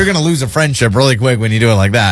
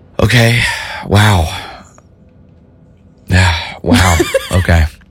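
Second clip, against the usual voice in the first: very slow, disappointed, let-down father voice; 8 semitones lower than usual. Acting out a parent whose kid reports what they did over the weekend, disappointed dad. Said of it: "Did that sound like a disappointed dad".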